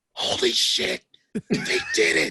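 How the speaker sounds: high, breathless yell-whisper.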